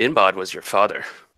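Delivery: gentle, quiet character voice. Game narrator voices Kalen coming up behind the players, Kalen's soft voice. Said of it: "in a soft voice".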